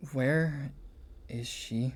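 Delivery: speaking very quietly. Game narrator voicing a sword-gripping woman casting a spell: very quiet voice. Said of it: "You hear her very quietly go".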